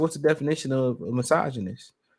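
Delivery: normal talking voice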